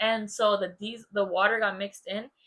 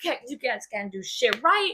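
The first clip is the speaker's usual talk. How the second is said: mock, pissed-off, scolding angry dad outburst; 2 semitones higher than usual. Retelling how dad scolded over dropped milk: imitating an angry dad. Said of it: "he'd be so pissed".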